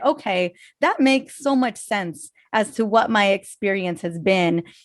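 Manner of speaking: ordinary talk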